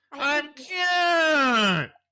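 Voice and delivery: very high, cute, drawn-out reindeer voice. Imitating how the reindeer in the movie talked: imitating the reindeer from the movie. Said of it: "And then he talked like this".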